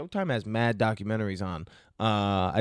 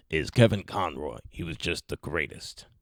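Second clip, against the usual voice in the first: breathy, hushed, whispered superhero voice; 6 semitones lower than usual. Speaker praising Kevin Conroy as the best Batman, in a Batman voice. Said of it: "I'm not even doing him justice by this Batman voice".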